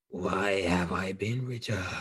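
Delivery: parched, dry, quiet croaking voice. Narrator voicing a woman stepping out of a tomb chamber, in a dry croaking voice. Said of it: "with a dry voice, uh, she croaks out".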